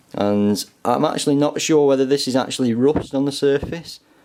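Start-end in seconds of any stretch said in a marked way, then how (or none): none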